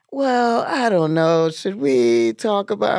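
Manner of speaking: high, slow, mocking put-on voice.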